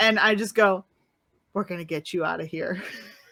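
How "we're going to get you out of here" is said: low, hushed, barely-there half-whisper. Speaking toward where April's ears would be as the head fades, half-whispering. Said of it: "I want to whisper".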